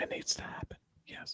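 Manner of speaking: whisper. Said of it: "What are you whispering for?".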